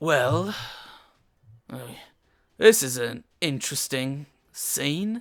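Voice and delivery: very rough, coarse guard voice. Describing a scene with clinking armor, a figure speaks in a rough voice. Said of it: "a very kind of a rough voice that says".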